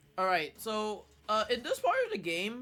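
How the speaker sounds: loud voice cracking and jumping high mid-line. Speaker explaining a section of a game, voice cracking. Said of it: "sorry, voice crack".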